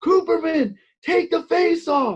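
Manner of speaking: very high, loud shouting. Retelling a coach screaming across the gym at practice: imitating someone screaming. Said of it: "he's just screaming across the room".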